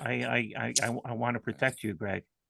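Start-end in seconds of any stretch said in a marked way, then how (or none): 1.0-2.2 softly spoken, quieter. Telling a friend he wants to protect him: soft voice. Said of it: "Your voice got real soft there".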